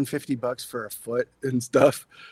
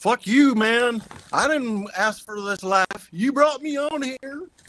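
put-on Southern accent spoken at a higher pitch; 9 semitones higher than usual. Retelling the Modern Prometheus story, voicing Frankenstein with a southern accent. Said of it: "I didn't know Frankenstein had a southern accent".

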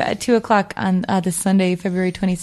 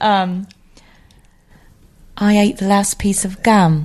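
put-on English accent; 4 dB louder than usual. Trying the line again in an English accent, Michael Caine-like. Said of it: "English accent applies".

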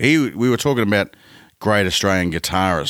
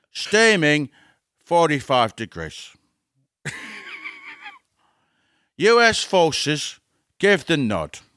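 put-on English actor voice, pitched higher; 10 semitones higher than usual. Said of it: "my Michael Caine impersonation".

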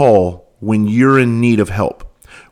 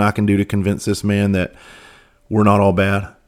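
normal talking voice

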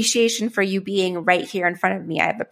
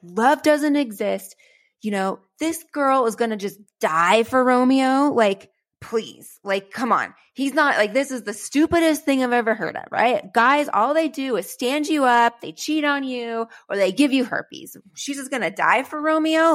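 mock livid, pitched-up, pissed-off angry rant; 5 semitones higher than usual. Retelling their reaction to reading Shakespeare, imitating an angry rant. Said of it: "I get so pissed off that I'm like".

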